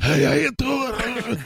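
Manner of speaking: mocking raspy hoarse voice. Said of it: "you sound like Super Dave Osborne with laryngitis".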